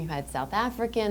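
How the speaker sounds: normal talking voice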